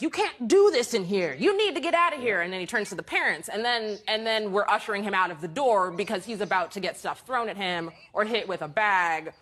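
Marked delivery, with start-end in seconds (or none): 0.0-2.4 put-on scolding, hollered telling-off. Retelling a scene in an ice cream shop: imitating someone yelling at kids. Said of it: "he's yelling at these kids".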